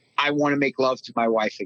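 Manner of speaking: ordinary delivery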